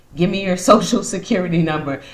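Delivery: words broken by laughter partway through. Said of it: "And I'm laughing".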